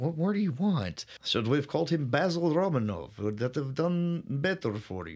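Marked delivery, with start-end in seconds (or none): 1.2-5.2 terrible fake Russian accent. Speaker suggests a different name for the character, in a terrible russian accent. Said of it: "My terrible Russian accent".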